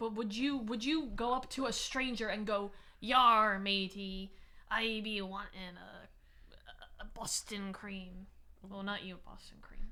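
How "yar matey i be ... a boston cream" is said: put-on pirate voice, very slow and drawn-out. Imagining asking a stranger for a boston cream donut, in a pirate voice. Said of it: "if you ordered Speaking Like a Pirate".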